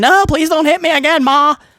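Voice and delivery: put-on frightened childlike voice. Retelling a storyline where Bayley hits Lyra, playing Lyra as a scared kid. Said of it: "the kid is all scared".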